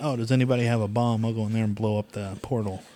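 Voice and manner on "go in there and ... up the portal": ordinary talk, nothing marked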